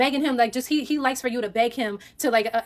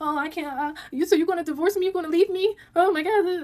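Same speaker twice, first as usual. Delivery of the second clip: weepy, sobbing, high crying whine; 5 semitones higher than usual. Retelling how her partner cried and played the victim: imitating someone crying. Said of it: "He starts crying".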